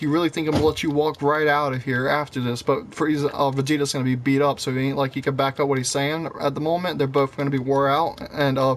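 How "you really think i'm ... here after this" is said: usual speaking voice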